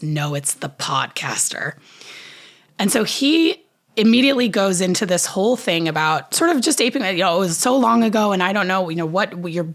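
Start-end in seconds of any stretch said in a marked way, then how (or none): 0.0-1.7 mock-venomous tone, lower and slower. Speaker retells Lisa answering a man's guess about them, imitating Lisa's venomous tone. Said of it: "with a truly venomous tone says".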